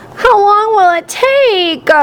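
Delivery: put-on high, whiny child's voice, stretching out "take". Narrator reading a story, voicing Dee Lee asking her dad, whiny voice. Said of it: "Dee Lee asked in a whiny voice".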